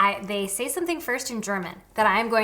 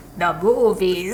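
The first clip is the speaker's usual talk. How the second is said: loud, straining for the deepest register; 2 semitones lower, 7 dB louder than usual. Asked to go once more, repeating a Vin Diesel impression. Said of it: "once more".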